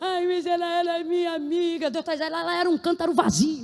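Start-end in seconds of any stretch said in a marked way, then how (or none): 0.0-1.9 mock-tearful whining, slower. A speaker acts out a complaint from someone addressed, mimicking tearful whining. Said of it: "Está chorando por causa de umas amizades".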